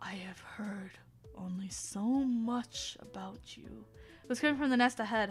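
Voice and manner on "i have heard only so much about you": deep booming, resounding voice, much slower. Reading a story where a voice from a nest speaks: deep booming voice. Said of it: "said a deep booming voice".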